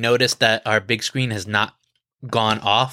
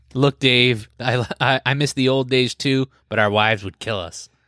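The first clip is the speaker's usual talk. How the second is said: normal talking voice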